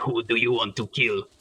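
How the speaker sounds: rough, rasping hired-killer voice. Describing shady dark web hitmen for hire: raspy hitman voice. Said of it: "they have a really raspy voice, and they go like".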